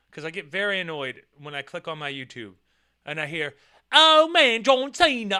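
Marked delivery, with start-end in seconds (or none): 4.0-5.4 silly put-on British accent, high, loud, drawn-out. Complaining about British voices on YouTube videos, mimicking one; mocking British accent. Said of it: "with your fucking stupid ass British accent".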